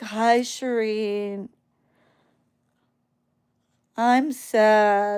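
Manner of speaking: zombie-like, flat, very slow, drugged-sounding monotone drone. Imitating the heavily medicated kid greeting her: imitating a zombie-like drugged voice. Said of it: "And he's like a zombie".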